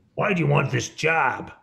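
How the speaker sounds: attempted American accent. Retelling a question asked at a job interview, trying an american accent. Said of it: "that was me trying an American accent".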